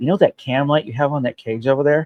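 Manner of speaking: whispered delivery. Retelling what a friend whispered while they sat waiting: imitating a friend whispering. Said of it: "Kevin whispers to me".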